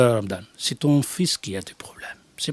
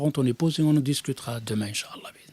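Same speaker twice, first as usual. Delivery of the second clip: ordinary talk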